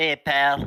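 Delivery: put-on New Jersey accent. Taking turns saying the same line in a Jersey accent: Jersey accent. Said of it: "Aries the winner".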